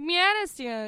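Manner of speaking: a grandmother's way of talking. Retelling how grandma called out, imitating grandma's voice. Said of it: "That's kind of her voice".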